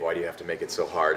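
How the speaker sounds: usual speaking voice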